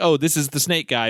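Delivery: ordinary talk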